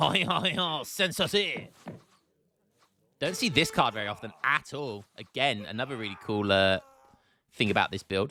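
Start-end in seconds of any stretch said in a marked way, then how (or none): 0.0-1.7 put-on French accent attempt, high and slow. Speaker reads out a card's name, trying a French accent. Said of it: "I'll try and do my best French accent".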